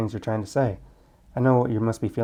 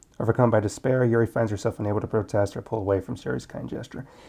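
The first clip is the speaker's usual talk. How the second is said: usual speaking voice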